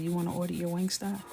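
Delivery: normal talking voice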